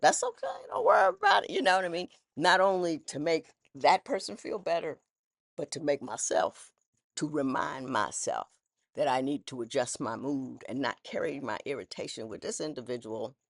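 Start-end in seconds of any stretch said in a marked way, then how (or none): 0.0-1.5 very high joking tone. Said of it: "I'll make some kind of joke".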